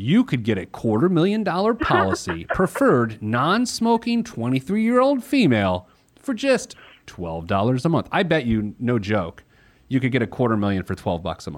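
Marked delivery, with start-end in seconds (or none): 0.0-8.1 ad-style announcer voice, much higher, much slower. Talking life insurance prices, sounding like a commercial: commercial announcer voice. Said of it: "I'm going to sound like a commercial".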